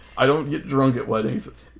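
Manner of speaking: plain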